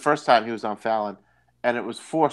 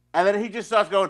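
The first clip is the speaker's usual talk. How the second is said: normal talking voice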